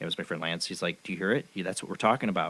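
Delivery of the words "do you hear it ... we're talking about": whisper, quieter. Retelling a friend waking them at night: imitating Lance whispering. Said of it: "Lance is whispering to me".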